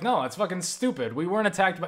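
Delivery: mock scoffing, contemptuous and scornful. Retelling an argument, imitating a friend's dismissive attitude. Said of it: "I'm trying to imitate the attitude".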